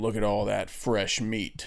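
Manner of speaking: low, quiet, slow, creepy voice. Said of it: "and he's like".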